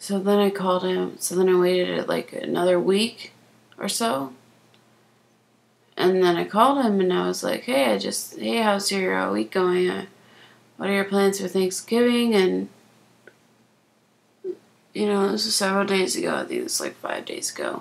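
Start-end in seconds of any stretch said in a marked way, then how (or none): none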